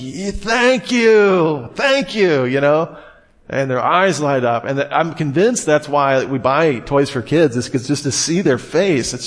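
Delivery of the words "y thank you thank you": put-on high, slow, thrilled, delighted childlike voice. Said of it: "Kids are just like".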